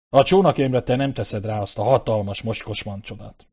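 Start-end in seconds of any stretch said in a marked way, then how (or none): none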